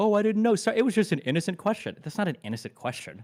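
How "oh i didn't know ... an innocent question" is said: taunting mock parody in a pitched-up parrot voice. Mimicking the other speaker's excuse during an argument: mocking imitation of the other speaker.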